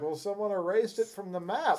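put-on young student kid voice. Retelling a film scene where one of the kids answers Yoda: imitating a kid from the film. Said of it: "And one of the kids is like".

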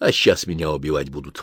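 ordinary delivery

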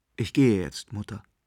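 ordinary delivery

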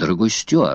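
ordinary delivery, nothing marked

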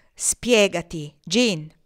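authoritative, commanding tone. Leaning forward with hands on the table, he orders another to explain, authoritative tone. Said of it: "Con tono autoritario ... egli ordinò".

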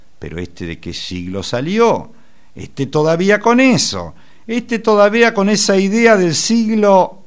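high loud scornful jeer. Speaker retelling what mockers say to you, mock-scornful and smiling. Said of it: "te dicen con sorna y con una sonrisa en los labios".

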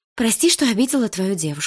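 words blurted out all at once in a rush. Malina, asked whether she has anything to say, blurts out her reply. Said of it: "выпалила Малина".

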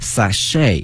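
American sachet, stress on second syllable chet. Explaining the American pronunciation of sachet: stress on second syllable chet. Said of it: "在美式发音当中，它的重音放到后面".

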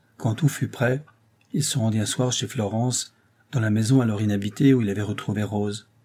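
ordinary delivery, nothing marked

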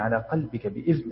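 ordinary talk

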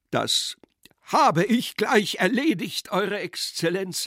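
vigorous, forceful, energetic high-pitched shout. During a quarrel, a man answers His Excellency, shouting energetically. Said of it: "schrie Pseldonimow energisch".

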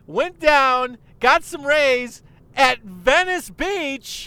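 loud, high, pumped-up pro wrestler hype voice. Retelling a man trying to get a crowd to clap for him, pro wrestler hype voice. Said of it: "speaks like a professional wrestler that's trying to get people to clap".

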